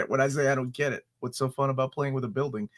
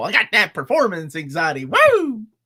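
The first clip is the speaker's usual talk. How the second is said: put-on, swooping old country bingo-hall lady voice; 5 semitones higher, 4 dB louder than usual. Mimicking the other speaker: imitating an old country lady at bingo. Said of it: "The oldest country lady at the bingo hall".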